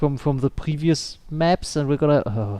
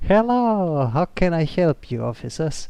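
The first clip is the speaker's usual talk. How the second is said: put-on German accent; 3 semitones higher than usual. A gamer echoes a receptionist greeting officers in the game, mock German accent. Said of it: "That German accent already".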